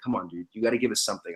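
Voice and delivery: urgent, pressing, hushed half-whisper. Retelling what the producers told him, retelling the producers half-whispering. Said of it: "They're like whispering".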